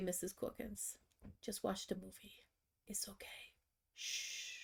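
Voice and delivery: put-on soft child's whisper, close to the ear. Retelling what a child whispered in her ear during a movie: imitating a child whispering. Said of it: "whispers in my ear".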